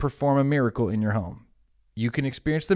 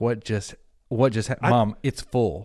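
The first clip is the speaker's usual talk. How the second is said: plain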